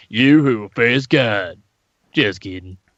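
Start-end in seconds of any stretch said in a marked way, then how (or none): 0.1-1.6 mock drunken speech. Repeating a line from the dub in Jesus's drunk-guy voice. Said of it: "He's got the shitty drunk guy voice again".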